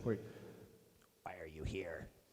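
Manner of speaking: very low, very quiet, hushed insect-like voice. A game master voices a creature speaking in the players' heads, insectoid creature voice. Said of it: "almo- like insectoid in nature".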